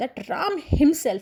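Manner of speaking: the word "Ram" hit with stress.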